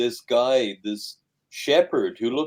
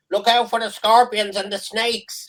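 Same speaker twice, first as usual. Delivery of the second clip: high, loud shout. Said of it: "he shouts down".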